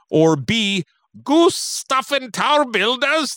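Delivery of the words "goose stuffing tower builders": rough, pitched-up attempt at a Scottish accent. Urged by another speaker to do the voice, reading option B: attempting a put-on voice. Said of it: "I'll try on this one".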